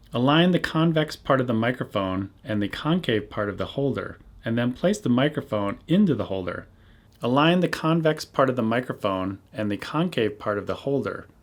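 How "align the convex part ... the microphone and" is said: plain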